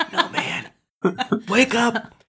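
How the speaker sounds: drawn-out, very high, very slow hushed whisper. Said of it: "in hushed whispers".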